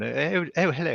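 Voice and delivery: put-on plummy, well-spoken English accent. Describing the narrator assigned to read the book, imitating a posh English accent. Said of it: "she's got a very what I would call a posh accent".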